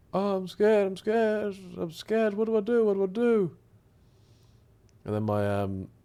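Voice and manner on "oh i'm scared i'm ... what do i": scared, crying, pleading voice, higher. Retelling going to the parents' room as a kid, imitating own childhood scared crying. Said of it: "I used to cry as a kid about death".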